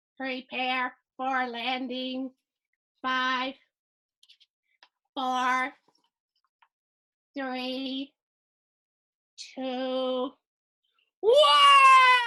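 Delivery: slow robot voice, with "one" drawn out. Storyteller retells warning the crew before landing, in his robot voice. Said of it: "in my robot voice".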